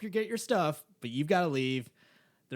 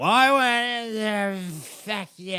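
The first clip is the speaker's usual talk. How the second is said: put-on drunk woman yelling, shrill, at full volume; 6 semitones higher, 8 dB louder than usual. Retelling a drunk woman yelling at him at 3 a.m., imitating a drunk woman yelling. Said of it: "this drunk chick like she's yelling at me".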